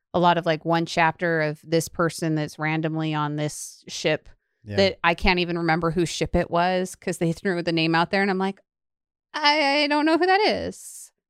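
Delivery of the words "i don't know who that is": put-on slight Italian accent, pitched up. Retelling her reaction while reading, the speaker sounds slightly Italian. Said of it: "she sounded a little Italian when she said".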